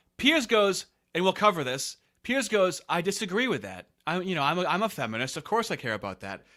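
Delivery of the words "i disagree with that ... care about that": put-on flat, level voice with no emotion. Retelling what Piers said in reply: imitating Piers with no emotion. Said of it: "No emotion in his voice".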